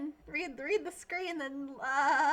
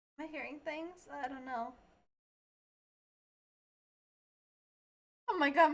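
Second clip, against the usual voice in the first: voice cracking. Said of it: "my voice is cracking like a teenage boy".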